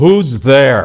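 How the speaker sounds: deep, loud male voice calling out. Retelling a story of stepping out of a car and hearing Mr. Albright's deep voice. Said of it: "I heard this deep voice going".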